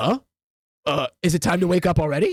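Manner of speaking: sleepy, drowsy, just-woken badger voice. Voicing a huge dire badger just woken from hibernation: sleepy dire badger voice. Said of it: "He goes".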